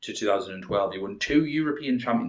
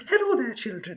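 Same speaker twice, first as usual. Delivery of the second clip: put-on very high Geordie old-lady voice; 13 semitones higher than usual. Joking about how a man sounds speaking English, a speaker does a Geordie Mrs. Doubtfire voice. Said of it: "a Geordie Miss Doubtfire".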